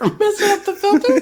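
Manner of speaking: put-on very high, childlike little kid voice. Improvised scene with a crotchety old man, a child asks him back: little kid voice. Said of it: "my little kid voice is hard to do".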